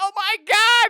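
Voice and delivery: very high, very loud, shrill panicked shriek. Retelling hearing a ghost with someone: imitating a freaked-out cry. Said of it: "And we freaked out".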